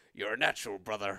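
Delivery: rough-edged pro-wrestler voice, so-so attempt. Quoting a line while admitting a cold: Hulk Hogan impression. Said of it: "that's Hulk Hogan, but I've got a cold. So forgive my impressions aren't that good today".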